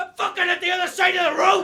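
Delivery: very high loud scream. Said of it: "just 'cause I'm screaming".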